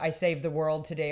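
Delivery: ordinary talk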